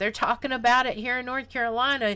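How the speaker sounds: normal talking voice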